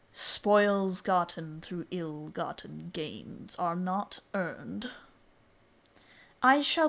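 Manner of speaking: low, resonant, echoing dragon-like beast voice. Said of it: "his voice just echoes".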